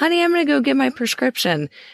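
high, put-on, called-out yelling. Retelling a commercial where a husband calls to his wife: imitating a man yelling. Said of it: "He's yelling".

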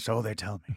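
put-on voice, cigar in mouth. Retelling a movie line about someone's wife: cigar-chomping Paul Newman voice. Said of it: "in his cigar chomping".

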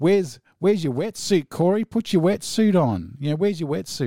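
put-on loud drunk Australian voice. Recounting a heckle from the crowd at a gig, imitating a loudmouth drunk Aussie. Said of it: "some loudmouth drunk Aussie goes".

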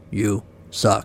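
gravelly, rough, mechanical robot voice. Narrator reading the little voice inside a crying woman's head: gravelly robotic voice. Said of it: "a gravelly robotic voice said".

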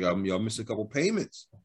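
normal talking voice

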